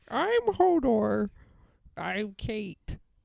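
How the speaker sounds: very slow, creaky, sing-song, swooping voice. Joking about having to do the others' voices: imitating Kate's voice. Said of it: "me doing your voices".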